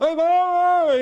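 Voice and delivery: frantic, shrill, very high, very loud shrieking. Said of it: "he's freaking out".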